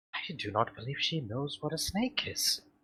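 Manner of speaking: confiding, stage-whispered aside. In character, whispering an aside to a fellow character about her: whispering. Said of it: "whisper over to".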